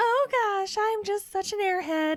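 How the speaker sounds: high, syrupy, simpering, sickly sweet put-on voice. Describing a woman who simpers everything she says, imitating a sickly sweet voice. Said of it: "It's like sickly sweet".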